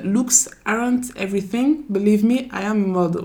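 bad, heavy French accent in English.

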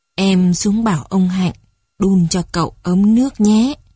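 ordinary delivery

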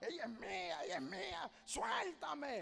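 soft, swooping demonic man's voice.

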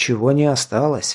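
ordinary delivery

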